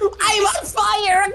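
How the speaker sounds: cartoon villain woman voice. Mid-game, a player shouts this and gets told they sounded like Yzma. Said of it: "Why did you sound like fucking Yzma from the Emperor's New Groove?".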